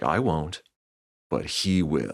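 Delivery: slow, dead-serious delivery. Telling a story, quoting a man who turns to the hotel guy, retelling a real serious reply. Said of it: "turns to him real serious and he's like".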